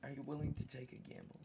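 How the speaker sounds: whispered. Turning to a companion in a role-played scene, whispering. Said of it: "I'm going to whisper".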